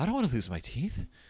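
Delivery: put-on voice near crying, on the verge of tears. Quoting a movie line about losing teeth: mock on the verge of tears. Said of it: "on the verge of tears".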